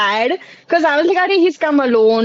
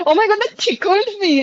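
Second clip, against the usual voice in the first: playfully ridiculing, silly, pitched-up teasing voice; 6 semitones higher than usual. Retelling how Rach mocks the phrase: imitating Rach mocking in a funny way. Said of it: "saying it in a funny way".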